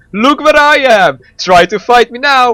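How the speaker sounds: high, loud, slow boastful yell. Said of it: "he just yells to the Mandarin".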